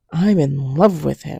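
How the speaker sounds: firm, forceful, meaningful delivery. Retelling what a best friend said on the phone: imitating a forceful declaration. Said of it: "so forceful and with such meaning".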